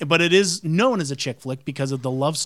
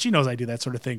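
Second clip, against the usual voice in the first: ordinary talk, nothing marked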